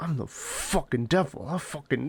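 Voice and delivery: super deep, slow demonic voice. Retelling a movie scene, mimicking a character in a super deep demonic voice. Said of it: "goes into, like, the super deep demonic voice".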